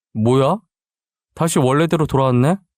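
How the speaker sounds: ordinary delivery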